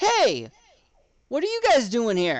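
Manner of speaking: loud, upward-carrying call. Storyteller voicing a woman calling up to the tower from below: yelling up to the tower. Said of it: "She yells up".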